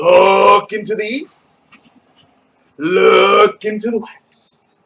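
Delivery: very slow and drawn out.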